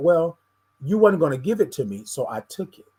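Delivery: offhand, plain, put-on matter-of-fact tone. Retelling what he said after hearing the news: imitating a matter-of-fact tone. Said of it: "in a matter of fact kind of way".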